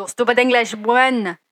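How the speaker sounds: failed, bad fake French accent. Mocking how French speakers react, the speaker attempts a bad French accent. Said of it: "Didn't sound French at all".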